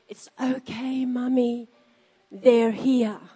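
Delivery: put-on whisper of a three-year-old child. Retelling what a three-year-old whispered during prayer: imitating Jamie's whisper. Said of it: "she whispered in my ear".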